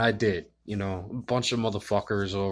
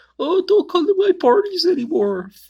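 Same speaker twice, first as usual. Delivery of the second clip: mock whiny crying, higher and louder; 10 dB louder than usual. Mocking a man who stormed out crying: mocking a crying man. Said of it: "crying about how he doesn't want any".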